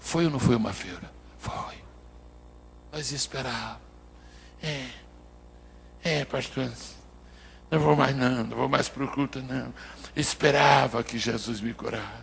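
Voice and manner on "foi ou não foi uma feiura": barely-there, very soft, hushed murmur. Asking the brothers a question so as not to shame the disciples: speaking very softly. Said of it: "Não, baixinho".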